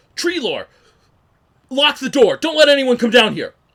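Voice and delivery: shrill, very loud, high-pitched barked shouting. Voicing Tommen as he points at an onlooker, Tommen shouting orders. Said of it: "And you hear him shout that".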